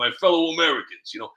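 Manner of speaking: put-on tough New York accent, gangster voice. Showing how the speaker does President Trump: Trump voice as a New York gangster. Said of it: "when I do President Trump".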